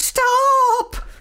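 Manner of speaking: very high-pitched, long-held, drawn-out shout. Seeing the dustman tip her rubbish into his truck, a witch is shouting from the window. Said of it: "Shouted Winnie".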